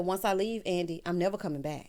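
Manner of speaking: plain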